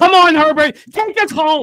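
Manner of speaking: loud, high-pitched, urging holler. Urging Herbert on while watching the game: yelling. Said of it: "I gotta stop yelling".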